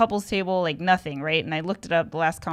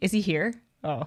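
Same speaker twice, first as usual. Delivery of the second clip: usual speaking voice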